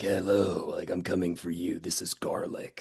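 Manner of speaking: slow, froggy, croaking voice. Imitating a movie performance being criticized: froggy croaky Corey Feldman voice. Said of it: "a froggy, kind of croaky voice".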